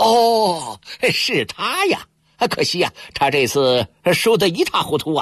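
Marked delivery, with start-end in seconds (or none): 0.0-2.1 very drawn-out, slow, swooping feigned dawning realization. Ya Likun answers the yellow-faced gambler with feigned sudden realization. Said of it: "亚历坤故作知情的恍然大悟".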